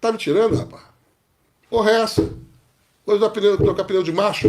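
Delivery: incredulous, rude cop voice. Imagining what a police officer would say about changing a tire: imitating a rude police officer. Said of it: "Ele olhava pra minha cara e falava".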